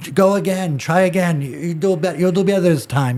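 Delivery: put-on high-pitched Brazilian-accented English. Retelling getting tied in a pretzel, speaker quotes the man in a brazilian accent. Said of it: "with this Brazilian accent".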